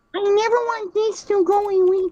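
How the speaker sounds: very high-pitched cartoonish voice. Trying to do a Timmy Turner voice for a line. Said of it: "let me try to do a Timmy Timmy Turner voice".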